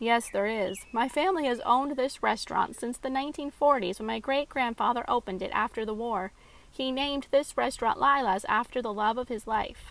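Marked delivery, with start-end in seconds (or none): none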